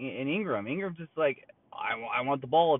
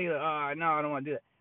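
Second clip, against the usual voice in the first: put-on nervous, scared-sounding talk; 3 semitones higher than usual. Describing how a man talked on a show clip, imitating nervous talk. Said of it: "he's talking like he's nervous".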